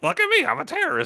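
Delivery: very high, goofy cartoon toy voice. Voicing a figure you made flail its arms, in a Robot Chicken voice. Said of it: "in a robot chicken kind of voice".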